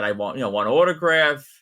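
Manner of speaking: plain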